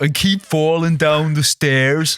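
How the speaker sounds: put-on Dublin accent. Asked for a line in their accent, trying it in a dublin accent. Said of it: "I'll try and do it in a Dublin accent".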